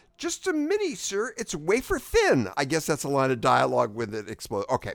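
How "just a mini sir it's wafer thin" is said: very high, drawn-out comic delivery. Quoting a line from a Monty Python movie: Monty Python line delivery. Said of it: "there's a way to say a Monty Python line, and you just did it".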